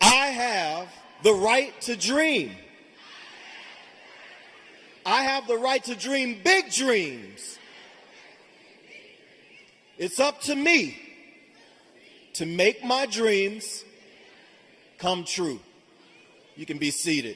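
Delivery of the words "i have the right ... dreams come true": big, commanding, convinced voice, louder. Leading graduates again after a weak repeat: big voice speaking with authority. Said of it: "you have to say it like you believe it".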